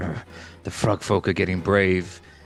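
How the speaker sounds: growling, muttered under the breath. Role-playing game: a player voices his character before grabbing a spear; growling to himself. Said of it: "He kind of growls to himself".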